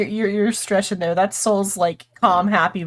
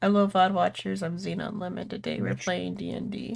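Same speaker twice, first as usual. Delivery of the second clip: listless, quiet, flat, low-energy, unenthused; 9 dB quieter than usual. Greeting the vod watchers at the start of a game: quiet, unenthusiastic voice. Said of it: "You sounded like you didn't even give a fuck".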